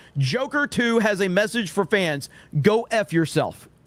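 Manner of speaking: normal talking voice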